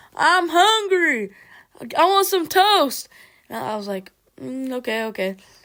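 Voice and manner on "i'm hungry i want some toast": very high, loud, demanding yell. Reminding the listener how they behaved, imitating them yelling. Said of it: "you're like yelling".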